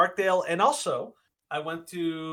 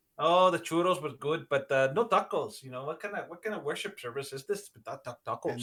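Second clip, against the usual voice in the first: assumed Mexican accent throughout. Joking about a service without tacos: put-on Mexican accent. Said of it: "you can do Mexican".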